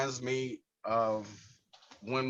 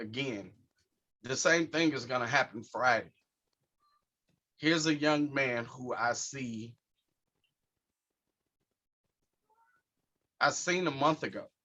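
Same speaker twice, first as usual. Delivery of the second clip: voice tearing up, holding back tears. Speaking about a young man he met a month ago, tearing up. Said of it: "I'm tearing up now".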